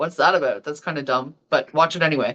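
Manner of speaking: glib, sardonic, tossed-off aside. Retelling how Mark Daly introduced a movie on TV: glib, sardonic Mark Daly impression. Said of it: "heard a more glib and sardonic person".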